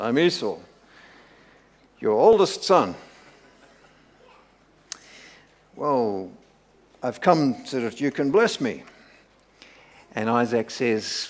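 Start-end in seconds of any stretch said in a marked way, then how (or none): 0.0-8.8 put-on voice dropped as low as possible. Voicing Jacob claiming to be Esau before his father: deepest put-on voice. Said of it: "probably he put on his deepest voice".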